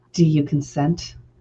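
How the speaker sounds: as sexy as possible, sultry, seductive voice. Asking the question in a mock seductive voice: sexiest voice possible. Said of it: "the sexiest way possible".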